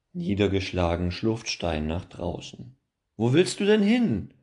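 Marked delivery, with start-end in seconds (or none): 3.1-4.2 very high, raised calling-out voice. A narrator voices a character calling after someone who walks outside: calling after someone. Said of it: "ruft Holger ihm nach".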